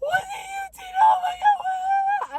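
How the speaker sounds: put-on very high, tearful weeping voice. Retelling a sister's call after a prank: imitating crying. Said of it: "she's crying".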